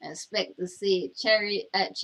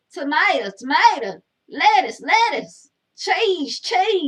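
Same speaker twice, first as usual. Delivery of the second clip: very loud, shrill, sing-song, swooping hollering; 8 semitones higher, 9 dB louder than usual. Telling a joke, acting out the woman on the top bunk: imitating someone yelling. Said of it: "And she's yelling".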